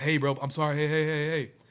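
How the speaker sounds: desperate, begging, pleading tone. Retelling how a robbed patient begged a gunman: imitating someone begging for his life. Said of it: "begging for his life".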